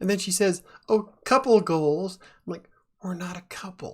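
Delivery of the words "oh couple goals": very loud, excited, bubbly gush. Speaker retells what a woman said about them matching, mock excited bubbly voice. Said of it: "she's all excited and bubbly".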